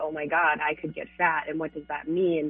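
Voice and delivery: ordinary delivery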